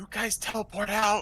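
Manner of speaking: high-pitched, half-whispered voice. Half-whispering in character to two companions so stealth isn't broken: half-whispering in character. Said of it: "I'm gonna whisper over to Corvin and Sarah".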